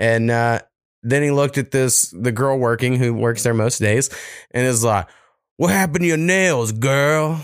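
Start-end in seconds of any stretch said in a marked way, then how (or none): 5.6-7.4 put-on Louisiana accent. Retelling what an old man said to a store worker: imitating a Louisiana accent. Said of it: "all of a sudden got this weird fucking accent going on, like, from Louisiana shit".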